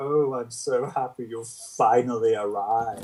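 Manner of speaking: put-on fey anime villain voice. Mocking a film villain as a fey anime villain: fey anime villain voice. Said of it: "He was a weird sort of fey anime villain".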